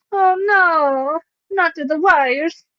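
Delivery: very slow, stretched-out cartoon plumber accent. Reacting to something on screen with a sudden Mario accent. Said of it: "I did that in a Mario accent".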